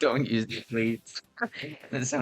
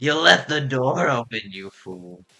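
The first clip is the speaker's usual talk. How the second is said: talking like a pirate; 3 dB louder than usual. Repeating the other player's line back, imitating a pirate voice. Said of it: "Why'd you talk like that?".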